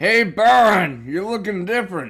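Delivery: very high, loud, shouted cartoonish voice. Playing both parts, he voices Fred greeting the other character: bad Fred voice. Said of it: "I'm not good at voice acting".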